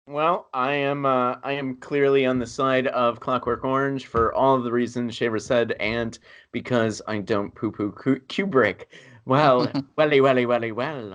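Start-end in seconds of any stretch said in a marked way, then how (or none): 9.2-11.1 fake British accent, played smooth. Quoting a line while arguing for Clockwork Orange: put-on British accent. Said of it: "that was the sexiest British accent".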